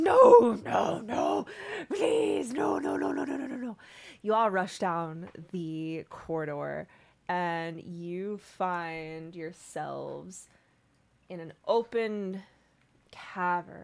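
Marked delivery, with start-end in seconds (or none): 0.0-3.8 high, very loud, frantic panicked scream. Voicing Droki screaming as the players hear him from afar: screaming in panic. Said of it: "you hear Droki screaming".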